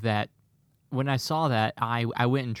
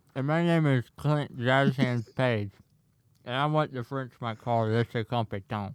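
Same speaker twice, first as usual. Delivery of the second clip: talking with food in mouth. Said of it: "it sounds like you had something in your mouth there".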